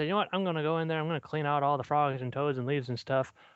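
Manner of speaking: usual speaking voice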